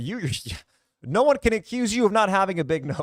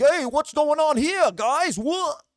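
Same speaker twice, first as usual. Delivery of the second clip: put-on angry New York accent, pitched up; 7 semitones higher than usual. Mocking an actor for having only one role, do his line while imitating an angry New Yorker. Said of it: "the angry New Yorker who wears a baseball cap".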